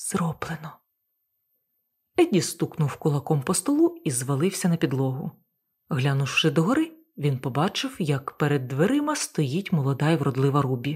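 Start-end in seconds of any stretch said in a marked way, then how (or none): 0.0-0.8 whispered, much quieter. Narrator reads a son leaning close to his father for the last word; whispered. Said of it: "останню фразу вимовив пошепки".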